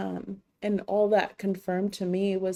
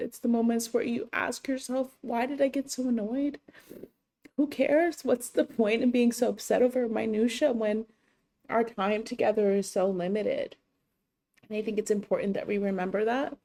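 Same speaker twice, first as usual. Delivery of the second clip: crying through words, tearful speech; 3 semitones higher than usual. Speaker on their channel reflects on losing someone they love: crying while speaking. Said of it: "I'm still crying".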